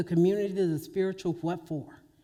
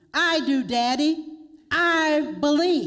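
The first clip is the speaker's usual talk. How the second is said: put-on little three-year-old's high calling yell; 8 semitones higher, 6 dB louder than usual. Retelling a three-year-old yelling from the back of the room; imitating little Lily yelling. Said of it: "a little small voice of a three-year-old Reverend Lily yelled out".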